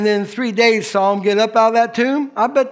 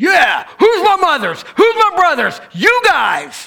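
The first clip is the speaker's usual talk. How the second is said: emphatic, raised hard, high swooping voice; 8 semitones higher, 4 dB louder than usual. Telling listeners how he answered about his mother and brothers, retelling a raised, emphatic voice. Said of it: "He raised his voice".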